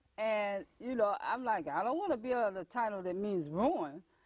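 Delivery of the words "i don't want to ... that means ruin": ordinary delivery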